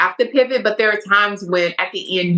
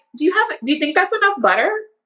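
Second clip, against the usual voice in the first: play-acted, pitched-up, pointed, leading tone; 7 semitones higher than usual. Speaker shows how she hints at her partner on the show: acting out a pointed hint. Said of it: "I'll be like".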